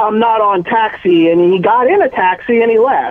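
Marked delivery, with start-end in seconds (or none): 0.0-1.3 irritated, annoyed, drawn out very slowly. Retelling a celebrity's reply after being mistaken for another actor: imitating an annoyed reply. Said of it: "he looked at me all pissed".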